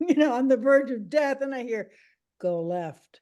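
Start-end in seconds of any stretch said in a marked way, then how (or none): 2.4-2.9 mock deadpan calm voice, lower and quieter. Recalling a voice heard while driving on the verge of death, retelling a deadpan calm voice. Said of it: "it was so deadpan calm".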